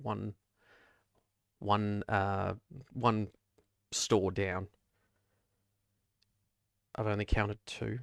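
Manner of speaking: soft, hushed stage whisper under the breath. Narrating a scene where Home Run leans into you outside: Home Run half-whispering. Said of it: "he just whispers".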